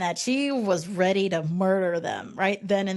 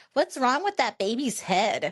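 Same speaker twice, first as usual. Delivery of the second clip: put-on blunt, straightforward child's voice; 4 semitones higher than usual. Retelling what a kid at the next table said to his mom, imitating a kid saying it loudly. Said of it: "says to his mom loudly".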